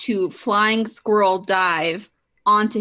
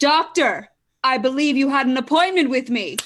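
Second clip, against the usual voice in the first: triumphant, confident, self-assured, pitched up; 6 semitones higher than usual. Narrating the scene, the speaker gives a character's line, triumphant and confident. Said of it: "Saya's triumphant and confident voice say".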